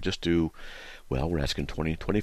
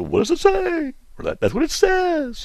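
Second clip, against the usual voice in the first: very high, shrill, swooping, teasing mocking singsong; 6 dB louder than usual. Speaker retells how a friend mocks his sayings: friend's mocking imitation of him. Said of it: "mockingly imitates me and says".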